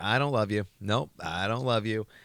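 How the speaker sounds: motherly voice. Retelling a frightening dream, imitating the mother voice. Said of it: "the voice of what I thought was my mom".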